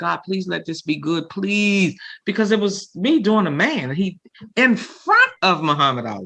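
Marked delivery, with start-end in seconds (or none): 0.0-2.0 put-on scared, fearful pleading tone. Retelling praying before going on stage, scared to death: retelling a scared prayer. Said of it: "I was praying".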